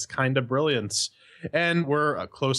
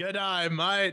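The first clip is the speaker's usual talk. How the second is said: put-on Australian accent, pitched up; 7 semitones higher, 3 dB quieter than usual. Opening a game review with a joke greeting: put-on Australian accent. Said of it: "this has nothing to do with Australia".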